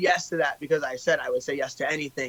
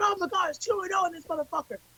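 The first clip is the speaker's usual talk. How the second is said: put-on screaming, higher; 7 dB quieter than usual. Retelling standing on chairs and calling out the crowd: imitating own screaming. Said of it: "fucking screaming".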